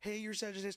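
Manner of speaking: nervous, high-pitched blurting, rattled off fast.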